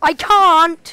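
very loud, high-pitched shouted outburst. Player told to collect gold during lag answers back, shouting. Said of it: "You don't have to shout".

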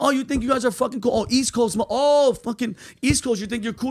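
put-on light holler, mild and held back. Retelling how instructors mocked him for being East Coast: imitating someone yelling. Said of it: "they're yelling at me".

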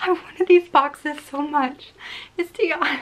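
on the verge of crying. Opening a box and finding it is tiana, the speaker is near tears. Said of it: "I can cry".

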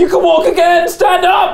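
mock, very high-pitched shout.

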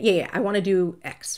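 ordinary talk

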